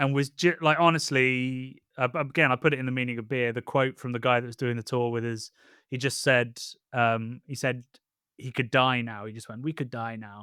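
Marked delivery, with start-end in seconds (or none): 9.6-10.4 sudden, dark, hushed half-whisper. Retelling what an old tour guide said in a cellar: imitating a half-whispered line. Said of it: "and whispered in a cellar".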